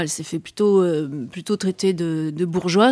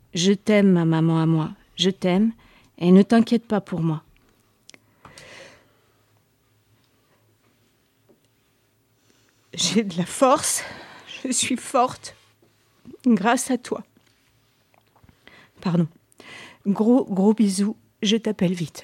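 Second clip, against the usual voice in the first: deeply moved, emotional; 2 semitones higher than usual. A mother reads aloud her daughter's letter from prison, very moved. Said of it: "je suis très émue quand je relis".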